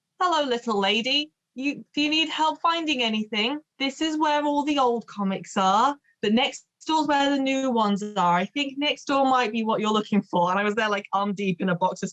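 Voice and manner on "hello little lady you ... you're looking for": higher, put-on, condescending, patronizing shopkeeper voice. Retelling what an old man at the counter said: imitating a condescending shop owner. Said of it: "word for word said".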